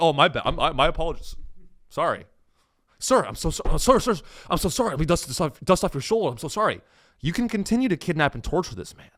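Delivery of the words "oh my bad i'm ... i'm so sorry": over-apologetic, stammering, groveling, backpedaling voice. Acting out a cop apologizing to a suspect: imitating an apologetic cop. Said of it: "they think that the cops like".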